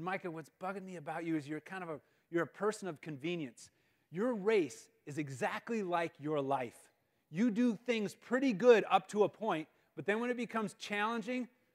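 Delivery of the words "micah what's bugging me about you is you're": usual speaking voice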